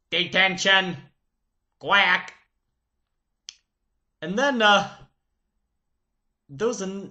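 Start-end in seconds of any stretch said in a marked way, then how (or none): 0.1-2.3 quacky, quacking duck-like voice. Recalling a strict teacher known for detentions, doing his duck-sounding voice. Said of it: "Along with his duck-sounding voice".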